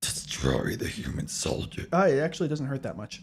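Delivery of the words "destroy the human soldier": slow, whispered, rasping villain voice. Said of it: "I even attempt to do his, do his voice".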